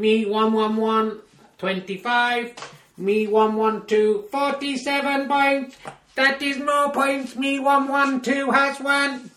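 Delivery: high-pitched synthetic robot announcer voice. Handing over to confirm the final score, the speaker announces it in a computer voice. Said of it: "Let's go over to Computer Voice to confirm it".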